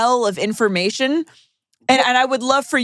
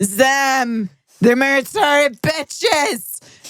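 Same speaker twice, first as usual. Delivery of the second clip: mock loud, drunk voice, pitched higher; 3 semitones higher than usual. Retelling the audience member pointing at the comics: imitating a loud drunk twink. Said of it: "he points at us. He goes".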